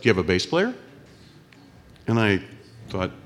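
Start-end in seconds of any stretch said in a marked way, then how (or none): 0.0-0.7 put-on Canadian accent. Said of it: "this strange fellow comes up with a Canadian accent".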